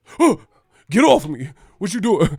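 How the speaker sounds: loud, high, paranoid startled yelp.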